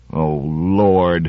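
mumbled, muttered under the breath. Narrator reads a man's reaction to a psychic researcher, muttered. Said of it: "muttered Trumbull".

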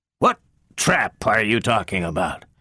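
stiff, rigid delivery. A narrator reads a man's question to a woman, stiffly. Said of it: "asked Lanning stiffly".

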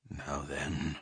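barely audible, low, hushed mumble. Replying to another speaker's question about love, mumbling. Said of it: "mumbled Odin".

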